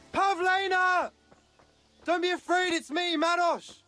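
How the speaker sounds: long, high-pitched calling out. Calling out for pavlena who got lost in the woods: shouting. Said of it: "shouting like that?".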